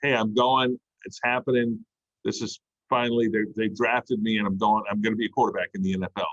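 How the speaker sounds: usual speaking voice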